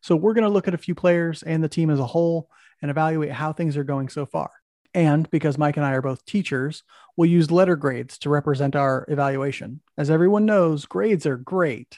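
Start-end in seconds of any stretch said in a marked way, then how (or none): 10.0-12.0 plainly insincere, sarcastic, mocking praising tone. A teacher introducing letter-grade evaluations of the team, sarcastic. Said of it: "If you didn't catch the sarcasm in my voice".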